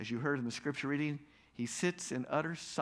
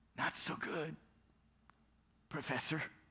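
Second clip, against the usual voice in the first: weak, feeble, trembling voice, soft; 2 semitones higher, 5 dB quieter than usual. Retelling a phone call, the caller answering the professor; imitating a weak, trembling voice. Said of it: "is a weak and trembling voice".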